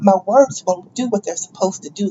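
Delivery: ordinary delivery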